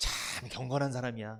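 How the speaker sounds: faintly scornful, snide, slightly mocking sneer. Demonstrating how a line can sound sarcastic: slightly mocking. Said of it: "약간 비웃듯이. 이렇게 말하면 안 되죠?".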